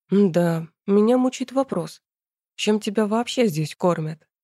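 ordinary delivery

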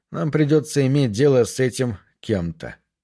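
plain reading voice

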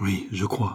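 murmured in failing voice. A wounded man answers his brother's question, murmuring in a failing voice. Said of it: "murmura celui-ci d'une voix qui défaillait".

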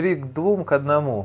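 plain reading voice

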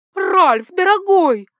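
very high, very loud, shrill bitter cry. A woman rushes across the hall to the narrator's husband, bitter exclamation. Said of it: "с горечью воскликнула она".

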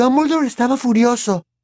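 very high voice, nearly frightened. Hermione comments after Harry speaks, in an almost frightened voice. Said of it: "con una voz casi atemorizada".

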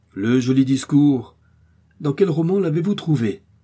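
sarcastic, scornful cry, high and mocking. A captain responds to someone's fine speech, exclaiming. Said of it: "s'écria le capitaine".

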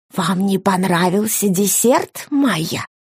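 theatrical stage whisper. Narrator reads an old man's question to Maya at the dinner table; stage whisper. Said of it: "спросил он театральным шепотом".

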